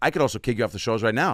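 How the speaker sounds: earnest, straightforward delivery. Recalling a warning from the man he toured with, in Bobby's sincere but direct way. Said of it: "he said it like with a very sincere but direct Bobby way".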